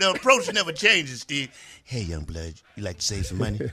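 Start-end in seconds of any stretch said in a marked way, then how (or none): 1.8-3.6 dropped voice, much lower and faster. Demonstrating the approach he always uses on people, in a dropped low voice. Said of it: "you drop your voice".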